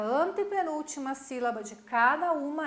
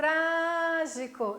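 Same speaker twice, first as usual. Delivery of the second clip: tra in trágico heavily stressed and pulled long; 2 semitones higher than usual. Teaching the stressed syllable in portuguese words: stress on "tra" in trágico. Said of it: "eu puxo no tra".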